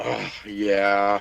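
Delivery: reluctant, unhappy. Answering whether buying the Leatherhead figure, sounding unhappy. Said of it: "You don't sound happy about that".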